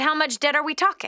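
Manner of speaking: ordinary talk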